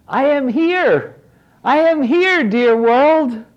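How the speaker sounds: ringing, astounded, very high shout. Narrating the unborn child answering the call from the master's womb: shouting back. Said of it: "shouted back in an astounding voice".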